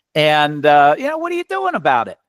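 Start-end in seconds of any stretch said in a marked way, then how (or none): 1.2-2.1 put-on pitched-up New York accent. Repeating his question to people about their problem, lapsing into a new york accent. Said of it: "I lapse into my New York accent sometimes".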